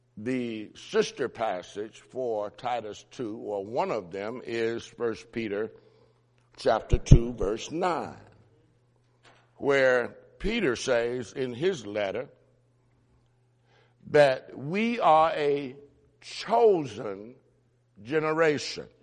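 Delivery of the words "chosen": stressing the word "chosen". Quoting a verse from peter's letter, with stress on chosen. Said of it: "with the emphasis on chosen".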